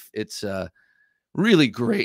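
voice cracking. Presenter introducing a camp kitchen knife, with a cracking voice. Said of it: "excuse me for the cracking voice".

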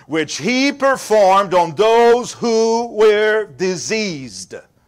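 slow, drawn-out, stretched "diseased". Speaker reading John 6:2 aloud, slow on 'diseased'. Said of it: "I like to speak slow that word".

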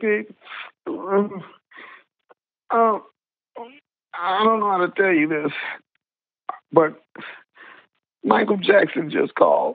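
put-on voice on the verge of crying. Retelling a call from his wife at the time: imitating someone almost in tears. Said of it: "she's almost in tears".

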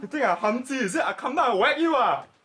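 very high, shrill, screeching shouting. In a skit, the mother threatens to whack someone, shouting. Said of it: "Mom, stop shouting at other people".

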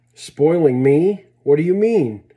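shocked, astounded, insistent and demanding tone. Rita answers Grandfather's remark, astounded and demanding. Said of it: "Demanded the astounded Rita".

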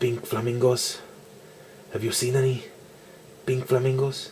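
put-on movie-star voice with a Spanish accent. Voicing Spider-Man answering a question about his hunting; Antonio Banderas voice. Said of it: "Why do I sound like Antonio Banderas?".

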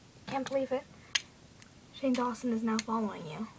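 ordinary delivery

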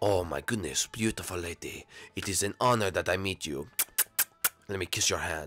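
very low, very deep, very proper courtly gentleman voice. Voicing a character introduced to Mom: French Koopa voice. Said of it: "this is French Koopa".

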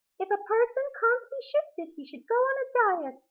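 very high, petty, spiteful, mean little voice. After failing to shove someone who is stuck, a beetle speaks in a mean little voice. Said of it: "said the beetle in a mean little voice".

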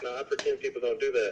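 usual speaking voice

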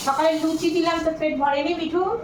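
high-pitched call projected across distance.

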